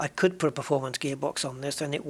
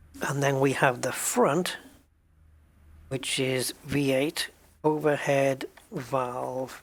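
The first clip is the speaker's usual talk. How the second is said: slow, measured, deliberate, spelled-out dictation pace. Listing exhaust parts while writing them down: speaking slowly. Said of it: "which is why I'm saying it slowly".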